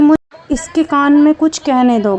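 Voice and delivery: ordinary talk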